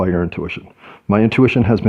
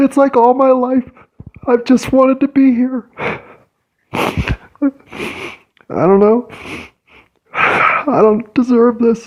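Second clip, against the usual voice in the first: very high, tearful, overwhelmed crying outpouring. Speaking to listeners while tears come: crying, overwhelmed. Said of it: "I'm not crying because I'm sad. I'm crying because I'm overwhelmed".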